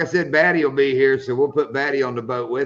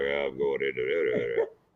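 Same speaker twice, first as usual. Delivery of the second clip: very deep, slow, leaning-into-the-mic voice; 12 semitones lower, 8 dB quieter than usual. Teasing about leaning into the microphone, imitating Shane's deep voice. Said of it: "He talks real deep".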